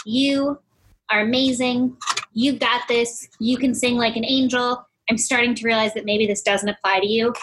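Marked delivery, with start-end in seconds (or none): none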